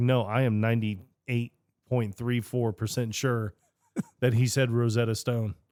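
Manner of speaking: ordinary talk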